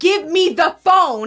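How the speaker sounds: slow, drawn-out, loud yelling. Retelling a second security worker's demand: imitating someone yelling. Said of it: "And they're yelling at me".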